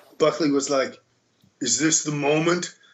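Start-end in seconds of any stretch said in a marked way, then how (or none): 1.6-2.7 mock wrestling announcer style. Retelling what Buckley said when they started out: imitating Buckley. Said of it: "That's a good Buckley impression".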